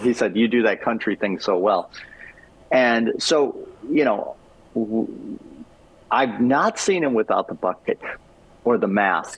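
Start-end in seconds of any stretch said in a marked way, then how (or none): none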